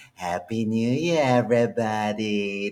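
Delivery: slow, drawn-out, sultry diva voice. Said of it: "I'm emoting the [name]".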